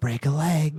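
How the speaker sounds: eerie, spectral, ghostly whisper. Narrator voicing a spectral figure floating away from the players, in a spectral whisper. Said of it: "it whispers".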